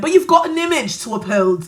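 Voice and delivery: speaking with British accent. Telling the audience they have an image to uphold, in a british accent. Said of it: "Don't laugh at my British accent".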